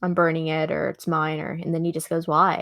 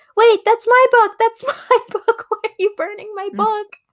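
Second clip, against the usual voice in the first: put-on very high, shrill, frantic, panicked child's cry; 7 dB louder than usual. Retelling how a kid reacts to his book being burned: imitating a panicking kid. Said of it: "the kid is freaking out".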